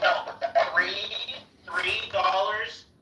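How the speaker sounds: screaming. Arguing over YouTube earnings with another speaker: screaming. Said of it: "why are you guys screaming?".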